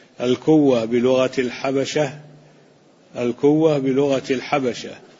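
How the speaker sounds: plain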